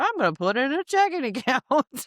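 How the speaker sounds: laughing through the words. Speaker explaining savings goals, laughing while talking. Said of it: "Sorry, I'm laughing".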